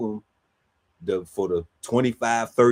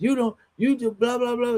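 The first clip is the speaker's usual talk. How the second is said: high, offended, defensive whining voice. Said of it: "So now he's".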